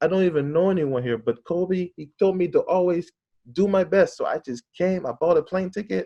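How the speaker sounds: put-on German-accented English. Retelling what a German man said to them, in a German accent. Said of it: "he had a German accent".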